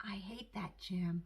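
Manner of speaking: careful, slow, hushed, quiet indoor voice. A child in school, told to use a quiet voice, answers Missus: quiet voice. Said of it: "I said in my quiet voice".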